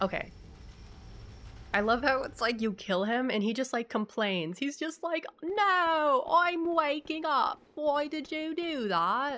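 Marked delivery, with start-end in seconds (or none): 5.4-9.4 put-on very slow, high, vaguely British accent, "no" drawn out. Describing how a game character complains after being killed, in Micolash's vague British accent. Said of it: "it's like not a British accent, but it kind of is a British accent".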